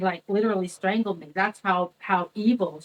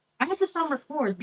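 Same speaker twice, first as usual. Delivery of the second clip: usual speaking voice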